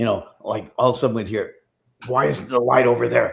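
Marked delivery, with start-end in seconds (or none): 2.1-3.3 rough, creaky horror villain voice. Retelling what a man used to call out when disappointed: Freddy Krueger voice. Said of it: "he would go into Freddie's voice".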